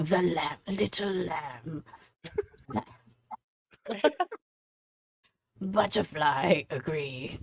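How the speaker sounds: creepy, eerie creature voice. A speaker quoting an occasional helpful voice, in a creepy Wendigo voice. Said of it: "Are you transmitting through creepy Wendigo voice?".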